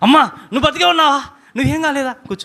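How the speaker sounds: high, fast, overjoyed, joyful outburst.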